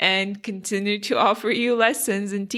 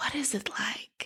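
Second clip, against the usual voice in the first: very quiet, shy, whispered delivery; 11 dB quieter than usual. Retelling how people ask the speaker about it, imitating their quiet, shy tone. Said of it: "they do it like in this more quiet tone and almost like in the shy manner".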